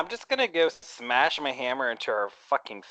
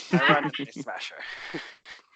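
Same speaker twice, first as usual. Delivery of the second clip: ordinary talk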